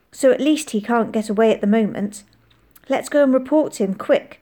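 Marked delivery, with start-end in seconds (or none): none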